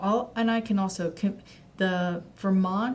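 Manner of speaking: stuttering, stumbling, with halting restarts. Giving viewers website links in a video, stuttering. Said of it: "sorry I'm stuttering".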